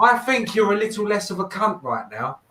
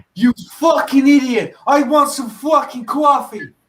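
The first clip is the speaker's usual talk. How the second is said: loud, raised, laid-on, put-on Brooklyn accent; 7 semitones higher, 6 dB louder than usual. Asked by another speaker to show off their brooklyn accent, brooklyn accent. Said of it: "could you give her your Brooklyn accent?".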